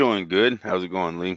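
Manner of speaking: very low, soft, glum, down-sounding voice. Asked how they are today, the fan replies sounding down. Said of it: "You sound down".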